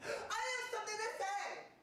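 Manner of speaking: very high, soft, earnest put-on impression voice.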